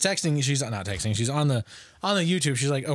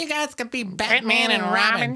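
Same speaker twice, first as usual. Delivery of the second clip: mock shrill, very high-pitched yell; 9 semitones higher than usual. Retelling how a friend's mom yelled about Halloween costumes: imitating Bee yelling. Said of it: "that's actually a really good Bee impersonation".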